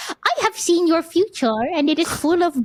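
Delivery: adorable, sweet, cute little creature voice. Speaker demonstrating an evil voice for a cute companion, in a cute voice. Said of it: "you give a very cute uh, object ... this voice".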